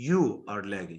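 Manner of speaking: strong contrastive stress on the word you. Explaining contrastive stress with an example: strong stress on "you". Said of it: "The stress is on you".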